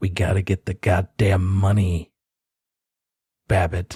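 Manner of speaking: muttered, in character voice. The narrator voices Grimly, pinned against the wall, muttering under his breath. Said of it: "say under his breath".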